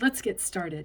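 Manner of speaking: plain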